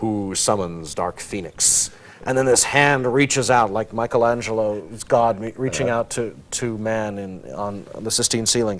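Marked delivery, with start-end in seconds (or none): 0.0-1.9 put-on movie reverb voice, lower, slower. Retelling a comic-book scene where a voice asks who summons it, Lucasfilm reverb voice. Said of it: "in incredibly Lucasfilm reverb".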